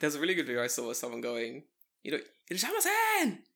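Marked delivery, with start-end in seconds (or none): 2.5-3.3 mock shouting, higher. Imitating store staff greeting someone who walks in: imitating store staff screaming. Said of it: "Everyone's screaming at you".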